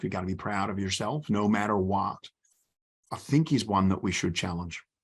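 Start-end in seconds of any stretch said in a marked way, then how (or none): 0.0-2.2 put-on American accent. Mocking the idea of always being proud: put-on American accent. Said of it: "I need to say this in an American accent".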